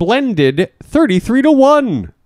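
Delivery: high, slow announcer voice.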